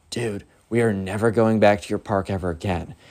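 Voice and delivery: quiet, half-whispered, under the breath. Telling a story where Ben half-whispers over to Bobby, retelling a half-whisper. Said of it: "whispers over to Bobby".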